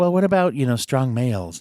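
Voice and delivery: ordinary talk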